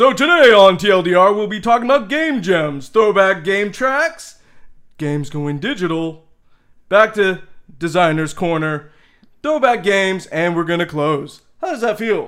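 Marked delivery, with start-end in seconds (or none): 0.0-11.4 loud show-intro announcer voice. Opening today's TLDR episode with a summary, in best introduction voice. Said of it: "I'm going to go into my best introduction voice".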